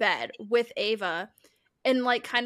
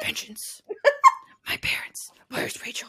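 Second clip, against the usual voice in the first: breathy, whispered superhero voice; 11 semitones higher than usual. Showing off a voice after being pitched as a voice actor: Batman voice. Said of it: "I can do Batman".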